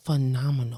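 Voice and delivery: dead-serious, solemn voice. Answering how are you in one word: serious voice. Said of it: "The way you said it".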